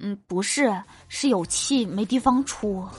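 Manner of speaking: very quiet, hushed mutter under the breath. Retelling a joke, quoting the father's reply: imitating someone speaking very quietly. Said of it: "我爸很小声地说".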